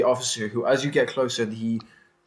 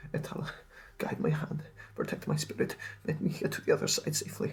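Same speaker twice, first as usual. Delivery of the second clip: murmured, mumbled, whispered quietly to himself; 7 semitones lower, 10 dB quieter than usual. Voicing a boy who keeps praying to himself: mumbling a prayer. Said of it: "he just starts mumbling a bit louder".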